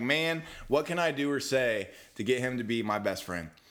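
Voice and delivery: ordinary delivery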